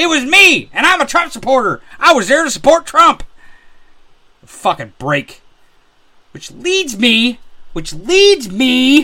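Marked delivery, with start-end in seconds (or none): 4.4-9.0 slow, steadily building, rising anger. Talking about people being arrested, the speaker is getting angry. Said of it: "I'm getting a little angry".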